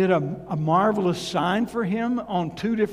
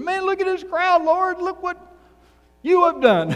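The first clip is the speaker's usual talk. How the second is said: put-on excitement, very high, loud; 11 semitones higher, 5 dB louder than usual. Retelling Gideon speaking to the Lord about the crowd: acting out excited Gideon. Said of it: "he's so excited what God is doing".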